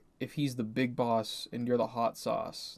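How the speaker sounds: ordinary talk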